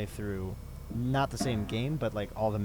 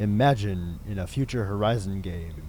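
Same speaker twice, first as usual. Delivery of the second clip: loud, grand, dramatic epic narrator voice; 6 dB louder than usual. Reading out someone's game idea from Discord: grand epic narrator voice. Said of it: "I'm going to do this in the epic voice".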